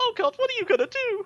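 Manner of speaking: very high-pitched, crying, sobbing voice. A storyteller voices a bandit who looks at the manacles: bandit crying and pleading. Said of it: "The bandit's just like like just crying".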